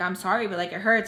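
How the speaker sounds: normal talking voice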